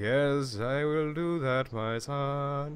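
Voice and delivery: very slow delivery, son drawn out. Retelling the Pope's speech on the news: imitating the Pope. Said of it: "that's just how the Pope talks".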